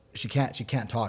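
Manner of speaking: normal talking voice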